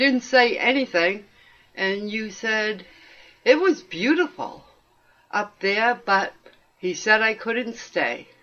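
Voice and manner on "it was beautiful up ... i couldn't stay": ordinary talk, nothing marked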